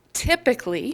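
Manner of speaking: heavy stress on typically. A presenter describing the intervention pyramid, stressing the word typically. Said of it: "I'm going to stress that word typically".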